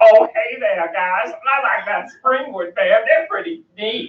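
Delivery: high-pitched cartoonish voice. Doing a cartoon impression after the group names Cleveland: Cleveland voice. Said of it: "Cleveland, Cleveland, you know".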